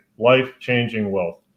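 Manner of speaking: normal talking voice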